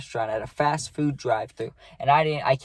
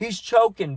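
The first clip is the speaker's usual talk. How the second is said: mock high, frantic, panicked shouting; 8 semitones higher than usual. Retelling yelling out while a friend choked on pancakes: imitating own panicked yelling. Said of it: "I'm just yelling".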